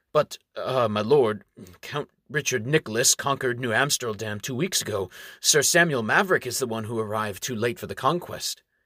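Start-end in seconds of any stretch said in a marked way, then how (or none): none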